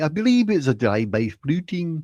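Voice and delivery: put-on nanny-like Scottish accent. Explaining an old habit, the speaker does a Mrs. Doubtfire impression. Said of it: "impression of uh, Missus Doubtfire going".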